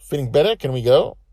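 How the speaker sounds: very high, very loud, eager excited squeal, rushed. After sitting by him and stroking his forehead, she asks him excitedly. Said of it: "she said excitedly".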